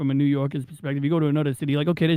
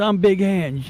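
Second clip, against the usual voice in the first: put-on Staten Island, New York Italian-American accent; 3 semitones higher than usual. Show how a Staten Island reality show lady introduced herself, in a Big Ang voice. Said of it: "she talked like this".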